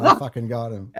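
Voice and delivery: loud, laughing, gloating. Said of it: "He's like".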